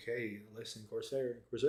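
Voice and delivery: soft, close, secretive, hushed half-whisper. Explaining how they talk up corsair to people, acting out half-whispering in your ear. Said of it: "I'm like whispering in your ear".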